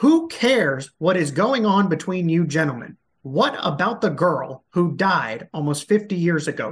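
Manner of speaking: frustrated, exasperated voice. A reporter venting about questions left unanswered: frustrated tone. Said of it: "I'm sorry if I have a tone in my voice".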